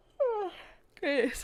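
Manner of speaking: talking through a yawn. Recalling being tired after a long trip, yawning while talking. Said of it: "I'm gonna yawn".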